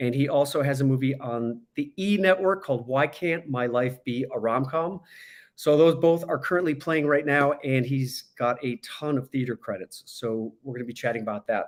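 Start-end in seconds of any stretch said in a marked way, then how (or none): none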